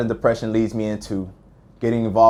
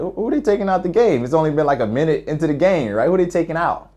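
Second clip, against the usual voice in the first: mock puzzled, confused, pitched-up wondering tone; 7 semitones higher than usual. Retelling own thoughts on hearing the buzzer: imitating own confused question. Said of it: "I look to the sideline confused".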